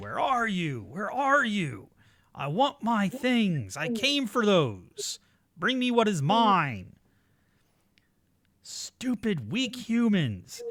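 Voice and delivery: shrill, full-voiced screaming at the top of the lungs. Telling a story, a man in the dark desert calls after you: screaming. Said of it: "and he's screaming".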